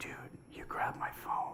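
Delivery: tiny, small whispered little voice. Retelling what a large man beside him said when his phone was grabbed, in a little voice. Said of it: "I hear this little voice out of this large".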